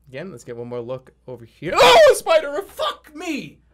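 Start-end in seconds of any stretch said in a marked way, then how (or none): 1.7-3.5 long, very high, very loud frightened shriek. Speaker breaks off a story about a jump, screaming in fright. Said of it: "[Jerma screams]".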